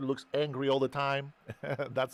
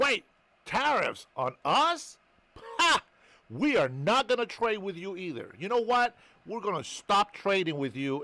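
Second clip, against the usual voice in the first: animated, swooping, pitched-up delivery; 6 semitones higher than usual. Retelling trade dispute as a skit, imitating Mexico's reply. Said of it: "And so Mexico says".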